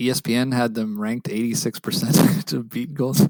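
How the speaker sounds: laughing through the words.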